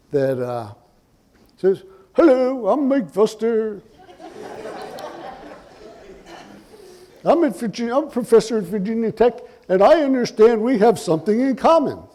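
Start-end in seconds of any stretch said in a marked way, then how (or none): 2.1-12.0 higher-pitched, put-on, non-local accent. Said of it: "this voice that didn't sound like it was a native Blacks-".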